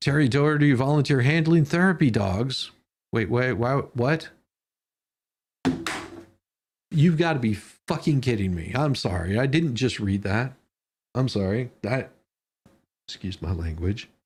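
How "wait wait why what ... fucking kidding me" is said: worked-up, agitated outburst. Reading out a volunteer's name and reacting to it, worked up. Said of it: "a really good way to get me to calm down".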